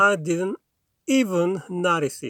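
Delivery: even set off by short pauses before and after. Teaching emphasis in I didn't even notice it: short pauses around even. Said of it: "앞뒤로 한 템포 씌워서 강조를 해주셔야 돼요".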